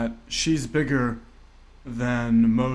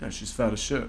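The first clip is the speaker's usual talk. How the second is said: usual speaking voice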